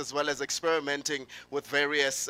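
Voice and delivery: ordinary talk, nothing marked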